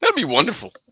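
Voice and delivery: sarcastic. Reacting to the idea of facing a strong team: sarcastic. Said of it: "I'm saying that sarcastically".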